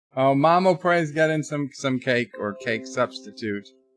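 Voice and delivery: ordinary talk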